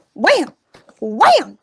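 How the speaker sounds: overly loud shout. Paige flattens cupcake liners while being coached, overly loud exclamation. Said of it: "you can dial it back".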